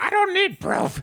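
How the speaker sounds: shrill, spitting, very high, furious scream. Game narrator voicing Herb while another man tries to calm him, Herb screaming. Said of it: "He screams and spittle flies out of his mouth".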